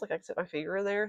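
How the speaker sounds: very fast, soft rapid-fire run of words. Describing holes left in crochet stitches, speaking very fast. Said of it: "I said that really fast".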